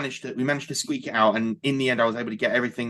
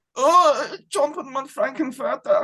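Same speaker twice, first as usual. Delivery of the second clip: mock German accent, higher pitch; 3 dB louder than usual. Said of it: "he's doing the German accent again".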